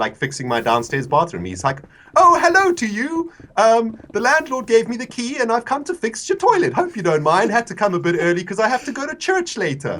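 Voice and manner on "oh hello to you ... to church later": very high, friendly, cheery chirping voice. Retelling what a workman said on arrival: imitating a friendly workman. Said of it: "there's just this really friendly, like, half-bald bloke".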